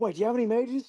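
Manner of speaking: smiling like a madman. Speaking in character during a game scene, smiling like a madman. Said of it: "I'm also smiling like a madman".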